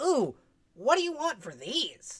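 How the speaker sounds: high-pitched little fairy character voice. Voicing a fairy shopkeeper looking up at the party: voicing a fairy. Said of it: "one of the fairies ... adjust tiny little glasses and go".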